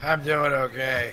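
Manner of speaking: sounding wasted, high, stoned. Show guest answering the host's greeting, sounding wasted. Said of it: "you sound wasted".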